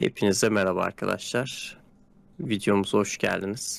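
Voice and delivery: low, creaky airline captain announcer voice.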